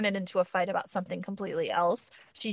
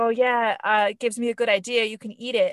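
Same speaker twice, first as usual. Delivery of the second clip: mock playful tone, higher and louder; 3 semitones higher, 6 dB louder than usual. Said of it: "he's pretending to be playful".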